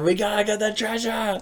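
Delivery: put-on rowdy, high, drunken pirate-voice screaming. Retelling a night of drunken pirate play: imitating own past screaming. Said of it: "we were just screaming stuff".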